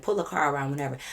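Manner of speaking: ordinary delivery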